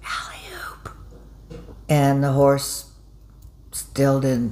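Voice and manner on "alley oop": very quiet, breathy, barely-there whisper. Telling a joke, the jockey at the second jump: imitating a whisper. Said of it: "he just kinda whispered".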